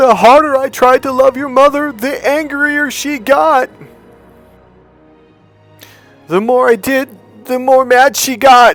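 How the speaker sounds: shrill, very loud, very high bawling sobs. Retelling what he cried out after that, imitating him crying out. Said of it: "He cries out".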